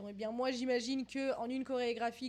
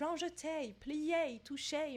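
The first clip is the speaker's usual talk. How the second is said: very slow French with an English accent; 3 semitones higher than usual. Saying French ballet terms like grand jeté, English accent. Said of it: "j'ai envie de le dire avec un accent anglais".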